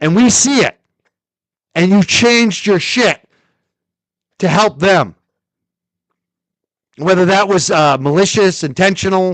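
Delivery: loud, high-pitched, accusatory yelling. Speaker addressing someone directly into the mic, yelling. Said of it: "I'm sorry, I'm yelling".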